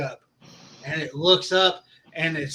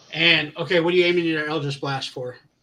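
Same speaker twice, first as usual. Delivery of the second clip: ordinary talk, nothing marked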